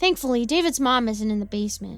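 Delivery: ordinary delivery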